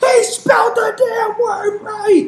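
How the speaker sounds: mock mother voice yelling, very high and loud. Imagining a mother jumping out of the crowd: imitating mother yelling from the crowd. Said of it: "jumped out of the crowd like".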